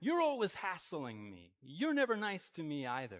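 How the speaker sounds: swooping, accusing, defensive, hitting-back tone. Speaker acts out how the other person fires back, mock attacking back. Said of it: "or you attack".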